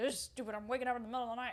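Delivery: mock irritated, worked-up, mad and fed-up. Retelling a complaint about getting up at night: imitating Cash being mad. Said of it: "he was all mad".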